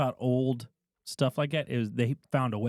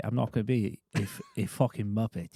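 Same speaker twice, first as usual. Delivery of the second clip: put-on London accent; 3 semitones lower than usual. Retelling an exchange with Henson, the speaker puts on a Michael Caine accent. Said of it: "I can't say Muppet with the accent".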